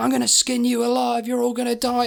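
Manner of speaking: put-on rough, all-out primal scream. Retelling shouting into a microphone as kids and teachers rush out: retelling shouting into microphone. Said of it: "still shouting into this thing".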